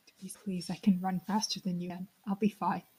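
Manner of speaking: very quiet, hushed voice, barely above a breath. Playing a character in a game who is pleading quietly: speaking very quietly. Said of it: "So I'm very quiet".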